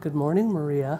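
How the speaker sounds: gentle soft voice. Retelling how a husband greeted his wife each morning, in a soft voice. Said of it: "he would say in a soft voice".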